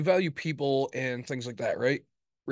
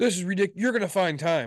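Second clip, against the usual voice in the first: mock heated, high, angry yelling tone; 5 semitones higher, 4 dB louder than usual. Recounting how she yelled at him, retelling her yelling. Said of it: "she's like yelling at me".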